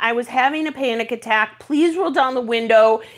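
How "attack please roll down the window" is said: normal talking voice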